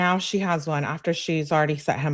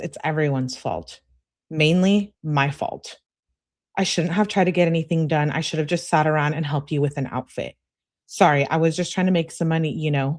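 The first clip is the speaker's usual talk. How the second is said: ordinary talk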